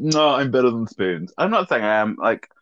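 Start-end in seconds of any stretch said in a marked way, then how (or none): 0.0-1.3 haughty, superior, snooty put-on voice. Recalling a night out with friends, playing their past self, mimicking a stuck-up attitude. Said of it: "the stuck-up one who's like".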